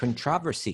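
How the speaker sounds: controversy with English pronunciation. Looking at commentary on a verse, English pronunciation of controversy. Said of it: "I think they say it like that in England".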